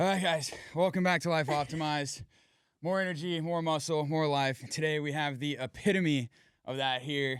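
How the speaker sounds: puffing, winded, huffing, out-of-breath delivery. Host welcoming viewers back to the show after a workout, huffing and puffing. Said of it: "the reason why I'm huffing and I'm puffing".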